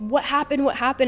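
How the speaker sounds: fast high yell. Recounting a traumatic moment, quoting a man yelling at the speaker: retelling a yell. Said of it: "yelling at me".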